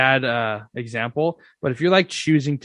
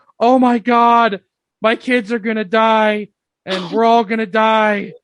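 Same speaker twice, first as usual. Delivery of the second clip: mock screaming, higher and louder; 9 semitones higher, 6 dB louder than usual. Retelling an imagined scene of running down the street at night: mock screaming. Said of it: "running down the street screaming".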